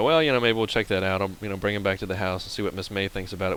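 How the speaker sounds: ordinary delivery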